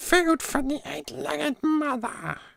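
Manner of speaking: very high, rough, creaky creature voice. A dungeon master showing the voice he does for kobolds: kobold voice. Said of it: "for the kobolds, the voices I go".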